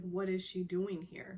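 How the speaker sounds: usual speaking voice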